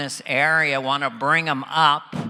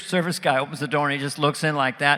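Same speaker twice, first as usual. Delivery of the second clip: plain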